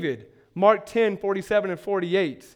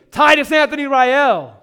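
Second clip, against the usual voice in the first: sharp, stern, raised scolding tone; 6 semitones higher, 7 dB louder than usual. Demonstrating how a parent addresses a child by full name, stern. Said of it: "So when I say sternly".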